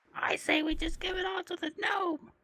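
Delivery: very high, slow, distant thrown voice. Kalthus throws his voice as if from a back room, Pee-wee Herman voice. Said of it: "tries to throw his voice like in a back room".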